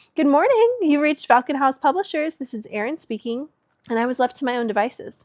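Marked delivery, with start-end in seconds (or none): 0.2-3.5 polished, bright, pitched-up customer service voice. A woman answering the ringing phone on her desk, best customer service voice. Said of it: "in her best customer service voice".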